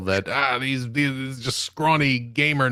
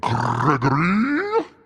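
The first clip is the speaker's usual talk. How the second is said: sinister, demonic voice like the devil; 3 semitones higher than usual. Asked whether Satan ever said the name, answering in a Satan voice. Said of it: "Has Satan ever said Gregory?".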